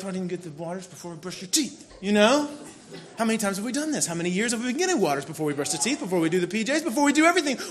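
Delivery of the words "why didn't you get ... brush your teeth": mumbled, muttered under breath to oneself. Retelling walking from bedroom to kitchen, muttering at someone: retelling a mumble under breath. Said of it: "I'm mumbling under my breath".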